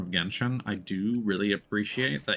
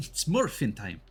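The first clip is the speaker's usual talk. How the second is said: put-on slight, odd, weird little Scottish accent; 4 semitones higher than usual. Describing a game character's hero-show line, in Sanhua's weird Scottish accent. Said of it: "with a little like weird Scottish accent".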